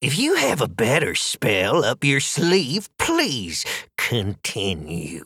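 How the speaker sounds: horribly saccharine, sickly sweet sing-song voice. Narrator reading the third witch's retort to the others: horribly sweet. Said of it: "the third witch said with that horrible sort of sweetness".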